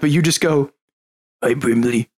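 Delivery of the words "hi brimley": soft quiet voice, lower pitch. Retelling a favorite moment where the character greets Brimley, soft Windar voice. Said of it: "it was so soft".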